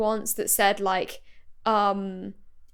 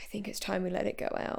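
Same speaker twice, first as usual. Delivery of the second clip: put-on grave, weighty, solemn, profound delivery; 11 dB quieter than usual. Retelling a TV scene, imitating Goodwin's profound delivery. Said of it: "he says it like it's a profound moment".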